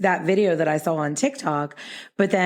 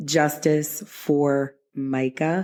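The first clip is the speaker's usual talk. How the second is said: each word drawn out very slowly and deliberately; 2 semitones lower than usual. Naming a case familiar from Facebook and TikTok: very slowly. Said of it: "which I have to say very slowly like that".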